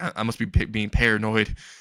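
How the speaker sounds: usual speaking voice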